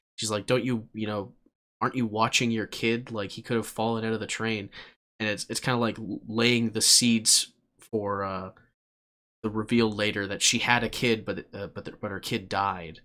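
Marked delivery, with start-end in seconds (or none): none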